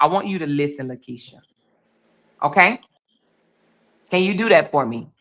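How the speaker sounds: slowed-down, low, measured and deliberate voice. Asking the other person to really listen, speaking in a slow, lowered voice. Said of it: "I'm gonna slow down and I'm gonna lower my voice".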